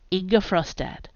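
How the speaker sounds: plain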